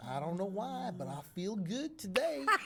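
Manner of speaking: put-on speaking with Southern US accent. Retelling what a man at the door said, in a Southern accent. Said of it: "He spoke like with a southern accent".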